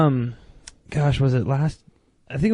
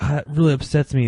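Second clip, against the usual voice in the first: ordinary talk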